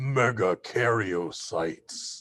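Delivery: playful, big, theatrical pronouncing voice. Presenter naming the large cells, saying the big word in a big booming loud voice. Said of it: "I like to say with a big booming loud voice".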